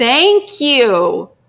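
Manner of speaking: loud shouting straight into the microphone. Speaker thanking the audience while leading a prayer, yelling into the mic. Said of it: "I'm yelling into the mic".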